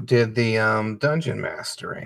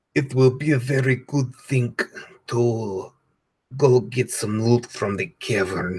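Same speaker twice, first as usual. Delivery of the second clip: shoddy, bad, put-on Russian accent. Recalling the murderous lady they played in a game, shitty Russian accent. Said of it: "like some shitty Russian accent where it's like".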